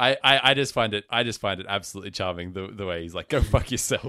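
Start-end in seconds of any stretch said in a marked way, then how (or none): 3.3-4.1 put-on Boston accent, louder, higher. Describing a film scene, the speaker quotes Will in his Boston accent. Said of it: "gotta put on".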